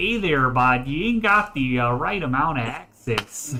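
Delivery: put-on Canadian accent. Quoting a machine's access message to friends, stereotypical Canadian accent. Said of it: "Do Canadian".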